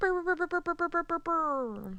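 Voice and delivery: high, blaring air horn imitation. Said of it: "Did I sound like air horns?".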